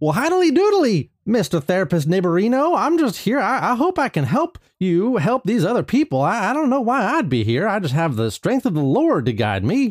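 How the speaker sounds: acted cheerful voice. Playing a therapy improv game as the named role: Ned Flanders voice. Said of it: "Ned Flanders".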